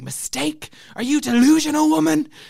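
very high, shrill, ragged, rough screaming. Retelling the prince's outburst at the speaker's mom, retelling a scream. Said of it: "he was screaming at me".

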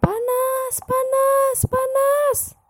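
possessed-sounding scream.

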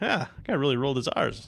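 normal talking voice

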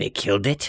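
perked-up, lively raptor voice. Voicing raptors who perk up after hearing a distant roar: voicing raptors talking. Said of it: "the raptors all perk up again and say".

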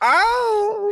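startled squeal. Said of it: "I said".

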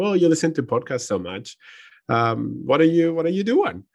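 mock jokey delivery. Quoting what she said to him: retelling a joking remark. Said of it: "mostly jokingly".

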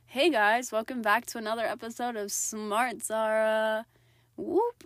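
very loud, cheery, upbeat host-style delivery. A host opening an episode of Smart Zara, happy and upbeat. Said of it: "I sounded so happy and amazing".

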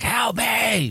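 screamed, high-pitched cry. Recapping The Blair Witch, where Josh is heard lost in the woods: imitating Josh screaming. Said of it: "screaming like".

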